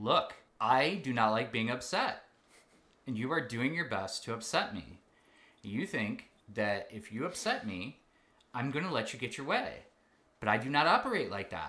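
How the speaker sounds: firm, no-nonsense parental voice. A father retells how he confronted his upset child, stern dad voice. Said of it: "I got the stern dad voice and I went".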